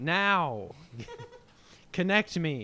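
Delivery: peculiar put-on voice, commanding, high and swooping around. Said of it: "You sounded like David Lynch".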